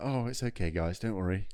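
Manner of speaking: posh, plummy, upper-class, proper-sounding voice. Imitating a man the others say sounds posh: imitating a posh-sounding man. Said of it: "he sounds very, like, um, posh".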